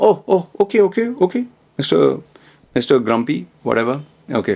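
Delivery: sarcastic, dismissive, swooping sing-song. Retelling a friend's reply to a serious remark: imitating someone's sarcasm. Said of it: "He was pretty sarcastic".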